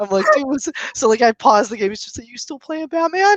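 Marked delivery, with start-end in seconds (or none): 2.3-3.4 put-on, pitched-up voice on the verge of tears. Retelling what a friend said when he walked in the door; imitating a friend near tears. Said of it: "Like in that voice".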